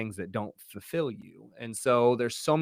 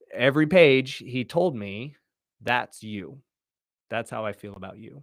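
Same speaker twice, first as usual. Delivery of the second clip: getting a little emotional, with raised voice; 5 dB louder than usual. A father recalling what his son told him, getting a little emotional. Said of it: "I'm going to get a little emotional".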